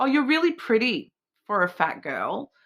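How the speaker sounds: put-on, sing-song, high, sarcastic backhanded tone. Imitating people who neg the speaker: imitating a sarcastic backhanded compliment. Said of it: "you can hear the sarcasm".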